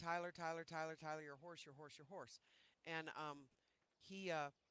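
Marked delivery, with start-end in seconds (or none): none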